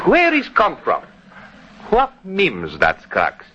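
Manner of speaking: Greek dialect. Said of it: "that Greek dialect of yours".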